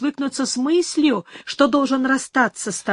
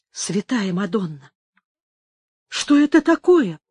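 hushed whispering; 4 semitones lower than usual. As a rider arrives shouting accusations, a woman exclaims: whispered. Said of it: "прошептала Инесс".

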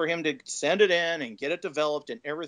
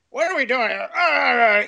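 mock grumpy old man voice, higher and louder; 9 semitones higher, 8 dB louder than usual. Retelling how a dad grumbled while digging out an old camera: imitating grumpy old dad. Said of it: "he's doing the old dad thing".

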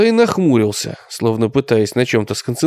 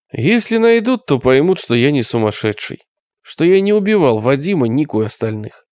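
ordinary delivery, nothing marked

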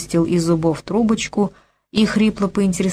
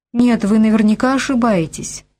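showy enthusiastic reassuring tone, higher pitch; 3 semitones higher than usual. A girl tries to calm the wounded man, reassuring with showy enthusiasm. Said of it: "принялась успокаивать его девочка".

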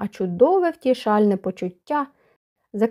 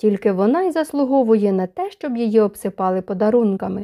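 plain

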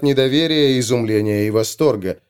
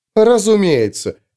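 snorting, much higher; 5 semitones higher than usual. Frina replies to the other woman, with a snort. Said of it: "хмыкнула Фрина".

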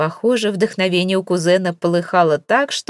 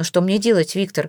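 ordinary delivery, nothing marked

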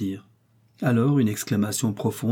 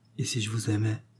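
soft, gentle murmur, quieter; 7 dB quieter than usual. Reading a novel, the narrator voices the young woman answering a pleading gentleman: soft murmur. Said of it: "murmura doucement Améliane".

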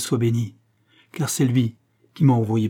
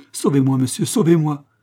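put-on frantic, terrified, distraught, desperate cry, girl's voice; 4 semitones higher, 4 dB louder than usual. A young girl being untied from a cross turns to a stranger, crying out. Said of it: "s'écria la jeune fille".

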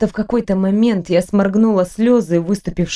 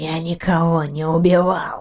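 strangled, wheezy, hoarse rasp; 3 semitones lower, 3 dB quieter than usual. The prince, being choked by the executioner, denies the killings in a hoarse wheeze. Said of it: "прохрипел Дианар".

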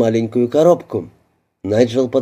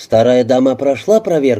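ordinary delivery, nothing marked

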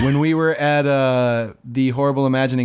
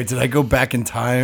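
normal talking voice

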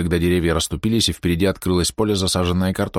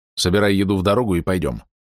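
ordinary delivery

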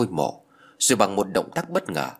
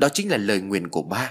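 ordinary delivery

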